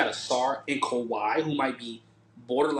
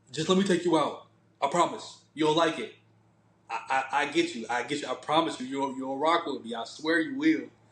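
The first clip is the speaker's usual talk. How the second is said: ordinary talk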